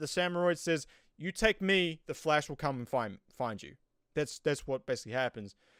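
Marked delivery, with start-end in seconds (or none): none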